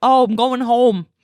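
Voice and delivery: Philadelphia accent, O vowels on "oh", "going", "home". Demonstrating how they say their o's: accent's o vowels. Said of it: "they say O's like".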